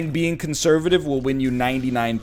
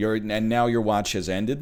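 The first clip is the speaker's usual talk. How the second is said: normal talking voice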